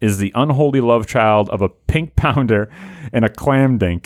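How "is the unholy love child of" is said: usual speaking voice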